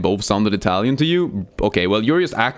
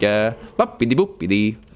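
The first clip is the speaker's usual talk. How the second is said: put-on, fake Norwegian accent babbling nonsense words. Joking about being Norwegian, the speaker shows how they would talk, mock Norwegian accent. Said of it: "I would sound something like this when I talk".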